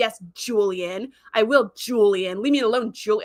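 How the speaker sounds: put-on, slow, dripping with venom and disdain. Describing how a TV character keeps saying Julian; mock venom and disdain. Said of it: "says Julian with like just dripping with venom and disdain".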